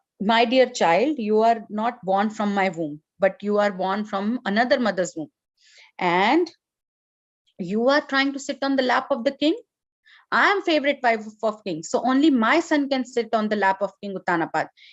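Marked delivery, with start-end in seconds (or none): none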